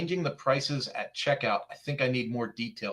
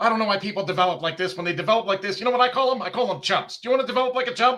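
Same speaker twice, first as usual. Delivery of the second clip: loud, pitched-up infomercial salesman sales patter; 8 semitones higher, 7 dB louder than usual. Acting out what a man said, in an infomercial salesman voice. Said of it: "that sounds like a classic infomercial style of selling".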